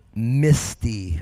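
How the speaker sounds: misty spelled out slowly, carefully enunciated. Describing the view over the mountain range, slow enunciated "misty". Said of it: "I had to slow that word down and enunciate".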